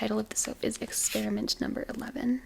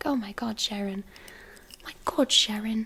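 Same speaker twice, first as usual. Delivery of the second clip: put-on British accent, commentator style, exclaimed; 3 dB louder than usual. Imitating a commentator on cooking shorts who calls everyone sharon, british accent impression. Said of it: "he has this like British accent".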